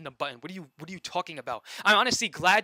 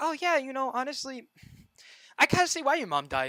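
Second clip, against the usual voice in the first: acted, high, syrupy, passive-aggressive fake-friendly voice; 9 semitones higher than usual. Imitating a passive-aggressive person who smiles at you: imitating smiling passive-aggressive tone. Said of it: "they smile at you and they're like".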